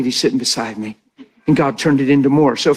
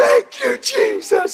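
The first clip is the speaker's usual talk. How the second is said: tearful, very high bawling sob. Retelling a woman hugging him in front of his congregation, imitating her bawling. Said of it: "And she's bawling".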